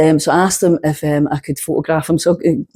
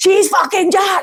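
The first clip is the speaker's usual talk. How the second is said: put-on very high call-out shout. Telling a story, quoting a lecturer who stood up in the audience: retelling a shout. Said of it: "and shouts out".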